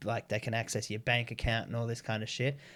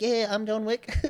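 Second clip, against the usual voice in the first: put-on Filipino accent, very high-pitched; 11 semitones higher, 4 dB louder than usual. Speaker retells answering a phone caller by imitating the caller's filipino accent. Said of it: "So I just started talking like that back".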